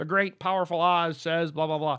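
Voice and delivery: announcer voice as if through a bullhorn. Retelling how a speaker relayed a message through a bullhorn: imitating a bullhorn announcement. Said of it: "she had the, the bullhorn and be like".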